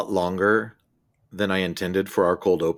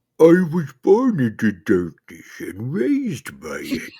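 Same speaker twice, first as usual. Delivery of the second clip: aged villain voice, much higher pitch; 7 semitones higher, 3 dB louder than usual. Asked his favorite Batman villain, the speaker answers in a Bane voice, sounding very old. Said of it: "You sound like Tom Hardy when he's 90".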